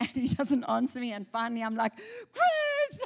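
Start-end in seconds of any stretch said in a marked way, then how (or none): 1.9-3.0 piercing, shrill scream pitched very high. Telling a story about the river, re-enacting screaming for chris, retelling a scream. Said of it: "And I'm screaming".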